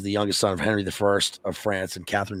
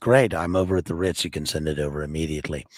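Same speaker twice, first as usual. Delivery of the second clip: put-on looming voice, much lower pitch; 4 semitones lower, 3 dB quieter than usual. Describing a film scene where Balkan speaks on the telephone, Balkan's looming voice. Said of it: "Balkan in his looming voice on the telephone".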